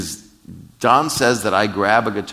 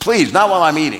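mock shouted yell, high-pitched; 7 semitones higher, 3 dB louder than usual. Telling a story about a man and a lady at a table: retelling a yell. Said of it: "he yells at the lady".

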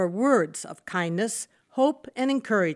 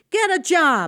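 loud, pitched-up yelling voice; 8 semitones higher, 6 dB louder than usual. A bully yells again at a homeless man who questioned him, yelling. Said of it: "The bully yelled again".

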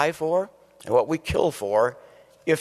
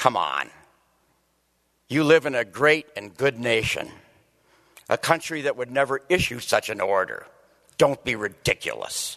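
mock severe, very stern scolding voice. Acting out one side of an inner debate about patriotism, mock-stern inner voice. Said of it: "very sternly".

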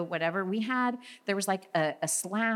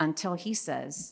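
ordinary talk, nothing marked

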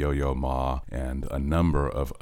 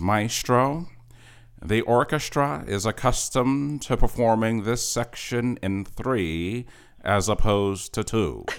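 slow, high, somewhat nasal voice; 8 semitones higher than usual. Retell the trumpet player addressing the young conductor mid-rehearsal, Bud Herseth's sort of nasal voice. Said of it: "in his sort of nasal voice".

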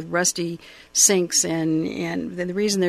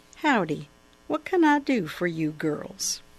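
drawled, slower. Narrator reading a hairdresser's greeting to two girls in a novel, slow drawl. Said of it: "slowly drawled".

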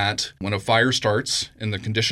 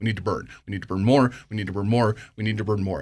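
put-on fed-up, worn-out, very exasperated tone. Quoting how any fire scientist would say it, mock-exasperated. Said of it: "say it in a very exasperated voice".

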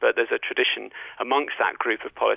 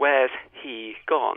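precise RP, h in he clearly sounded. Explaining hypercorrection, the speaker demonstrates someone adopting RP: careful hypercorrected RP. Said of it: "more careful and say".

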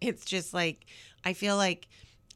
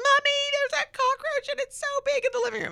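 put-on very high, very loud top-of-the-lungs kid shriek; 5 dB louder than usual. A mother re-enacts her daughter calling to her: imitating her daughter screaming. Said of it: "she screams at the top of her lungs".

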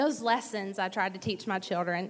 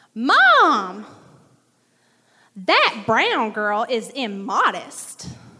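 put-on very loud, swooping southern country girl voice; 2 semitones higher, 12 dB louder than usual. Retelling someone announcing to her mom across the airport, little country southern voice. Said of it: "in her little country southern voice".

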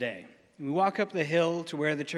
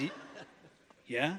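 cool, groovy, laid-back voice; 7 dB quieter than usual. Retelling a phone call with a wildlife rehabilitator: imitating a groovy voice. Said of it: "in a voice that is far groovier".

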